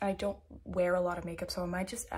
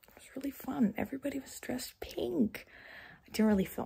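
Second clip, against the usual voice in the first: speaking softly, higher pitch; 6 semitones higher than usual. Talking after midnight while the family is downstairs: talking quietly. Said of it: "I'm talking quietly because my family is downstairs".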